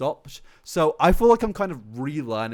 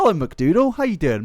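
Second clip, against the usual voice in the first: very high voice, breaking and cracking; 7 semitones higher, 6 dB louder than usual. Greeting someone by name on a live video, voice cracking on the hello. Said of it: "My voice just cracked saying hello to you".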